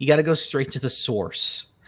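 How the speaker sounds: put-on American accent with hint of New York. After arguing sauce versus source, trying a put-on American accent. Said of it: "let me try to do it in my American accent".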